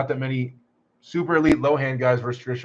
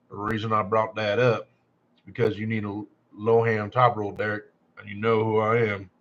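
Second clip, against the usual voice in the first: put-on western cowboy voice; 4 semitones lower, 3 dB quieter than usual. Reading out what a user says, in a cowboy voice. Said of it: "can I do it like a cowboy voice?".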